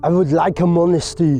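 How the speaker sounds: put-on Austrian accent. Quoting what someone said, which came out in an Arnold Schwarzenegger accent. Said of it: "I don't know why he sounds like Arnold Schwarzenegger".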